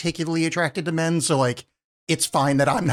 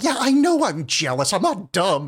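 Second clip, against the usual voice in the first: slow, restrained, dragged-out villain scream; 3 semitones higher than usual. Retelling a movie scene where the villain screams: imitating Lex Luthor screaming. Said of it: "that part where he's screaming".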